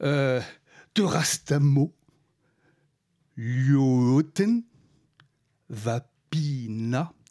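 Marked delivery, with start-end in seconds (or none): 5.7-7.1 every syllable deliberately drawn out. Pronouncing a finnish word where every letter is sounded: syllables deliberately drawn out. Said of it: "je fais exprès de traîner les syllabes".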